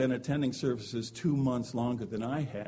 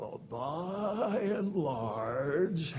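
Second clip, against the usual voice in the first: very slow, drawn-out "by" in "by and large"; 4 semitones higher than usual. Speaker recalls how a man used to start his sentences: retelling a drawn-out phrase. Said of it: "He would draw it out".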